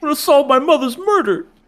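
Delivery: put-on very high whiny teenager voice. Joking about a new headcanon for a character: Aqua as a whiny teenager. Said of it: "Aqua has to sound like a whiny little teenager".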